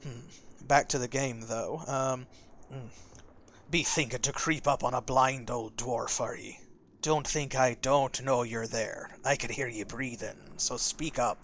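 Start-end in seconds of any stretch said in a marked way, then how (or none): 3.7-11.5 pirate brogue, vaguely Scottish. Voicing a character during a game, in [name]'s pirate accent. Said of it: "that's just my pirate accent".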